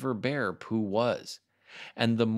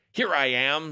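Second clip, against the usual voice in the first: growling like a bear; 4 semitones higher, 4 dB louder than usual. Reading a story, a voice answers from behind the boy calling out, in a growly Pooh voice. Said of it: "said a growly voice behind him".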